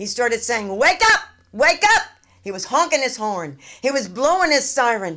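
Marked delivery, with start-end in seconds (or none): 0.7-2.0 very high, shrill, loud screaming. Retelling a policeman trying to wake a sleeping driver: imitating a policeman screaming. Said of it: "he started screaming at me".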